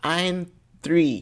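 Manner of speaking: put-on high, little small child's voice. Retelling a kid's answer on a call, imitating a little kid's voice. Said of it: "The voice is crazy".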